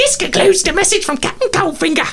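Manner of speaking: very high, put-on goblin voice. Game master voices a goblin delivering a message: goblin voice. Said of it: "in the goblin's voice".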